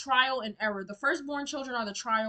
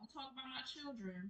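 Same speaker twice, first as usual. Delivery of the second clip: very soft, hushed, quiet, protective, guarding voice; 2 semitones higher, 20 dB quieter than usual. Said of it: "you know how she sound".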